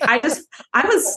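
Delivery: plain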